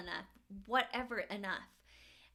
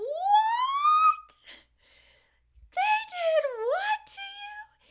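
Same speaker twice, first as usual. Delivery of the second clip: hysterical, very high, very loud, slow, drawn-out screaming; 12 dB louder than usual. Speaker retells calling her mom from jail, imitating her mom screaming. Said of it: "She is screaming".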